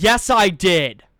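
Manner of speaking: very loud, sass-laden, sassy voice. Answering a favorite manager who said it wasn't needed, retelling a sassy reply. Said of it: "in the most sassy voice possible".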